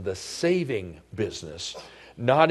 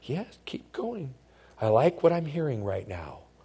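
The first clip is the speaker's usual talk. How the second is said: put-on whisper at much higher pitch; 2 semitones higher than usual. Telling listeners what Satan whispers to them, Satan whispering. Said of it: "He whispers to us".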